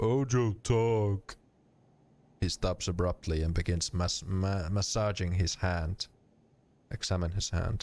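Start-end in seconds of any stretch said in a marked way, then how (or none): 0.0-1.4 voice of a dumb brute. Reading a game aloud, the speaker redoes the character's reply: Ojo's dumb brute voice. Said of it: "I should give him more of a dumb brute voice".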